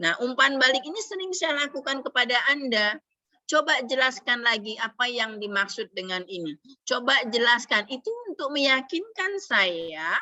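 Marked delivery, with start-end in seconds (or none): none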